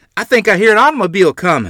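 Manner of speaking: very high, very loud hollering shout. Running to the front door, the narrator calls to the household, hollering. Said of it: "I hollered".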